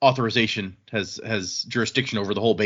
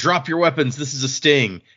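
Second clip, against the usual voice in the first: put-on curt, firm, authoritative police-style voice; 4 semitones higher than usual. Retelling a scene where someone orders everyone to drop weapons: imitating someone yelling. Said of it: "someone yells out".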